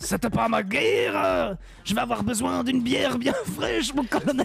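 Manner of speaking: put-on Belgian accent. After asking if he can do Rambo with a Belgian accent: Rambo with a Belgian accent. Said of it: "Tu crois que je peux faire Rambo avec l'accent belge?".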